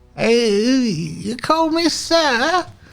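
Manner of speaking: put-on old man wheezing after laughing. Voicing an old man who wipes his eyes after laughing: old man wheezing after laughter. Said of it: "the wheezes of, like, the tail end of laughter".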